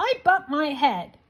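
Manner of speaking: small, cross, grumpy voice. Reading a story, the narrator voices the rabbit down the well in a cross little voice. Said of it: "A rather cross little voice answered".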